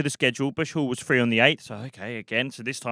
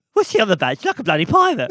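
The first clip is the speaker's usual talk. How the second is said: shrill, loud, sing-song, very high and swooping; 9 semitones higher, 6 dB louder than usual. Retelling a birthday scene, doing an impression of Alan Carr. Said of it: "he'd do an impression of Alan Carr".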